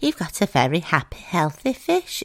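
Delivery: cartoon hamster character voice. Retelling a cartoon episode, the speaker quotes the vet in Dr. Hamster voice. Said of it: "Dr. Hamster talks like that, and she goes".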